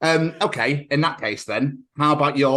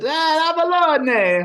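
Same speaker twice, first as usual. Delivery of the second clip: very high put-on Italian accent, one word drawn out; 3 dB louder than usual. Calling out the other speaker's surname to show how it sounds, Italian accent. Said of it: "would sound amazing in an Italian accent".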